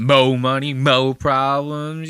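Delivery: stress thrown hard, exaggerated and overdone. Speaker mocking how some people say a phrase, with exaggerated emphasis. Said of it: "They start throwing an emphasis on it".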